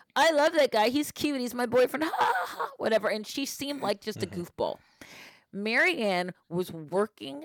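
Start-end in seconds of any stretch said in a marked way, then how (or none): 0.1-3.0 put-on high, giggly valley girl chatter. Describing a giggly Canadian girl and how she talked; giggly valley girl voice. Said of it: "who talked like a valley girl".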